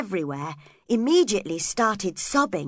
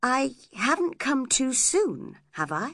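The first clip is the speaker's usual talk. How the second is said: polite, courteous, well-mannered tone; 4 semitones higher than usual. Edgar comes in as Heathcliff runs out and asks Catherine, polite. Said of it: "asked Edgar politely".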